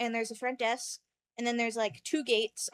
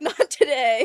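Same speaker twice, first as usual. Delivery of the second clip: imitated grand, epic delivery, louder; 11 dB louder than usual. Retelling a dream where Dad refuses a sword: imitating an epic delivery.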